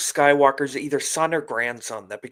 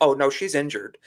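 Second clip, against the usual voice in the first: plain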